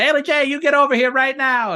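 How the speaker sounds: put-on high, loud, hollered Louisiana accent. Acting out a mom calling her daughter over to sign a poster, [name]'s Louisiana accent. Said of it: "The Louisiana accent".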